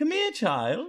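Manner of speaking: very high, great talking owl voice. Voicing a great owl waking up and calling out: great owl voice. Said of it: "he kinda bends down a little more".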